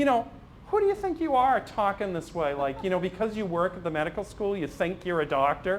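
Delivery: put-on high-pitched, cocky, challenging young guy voice.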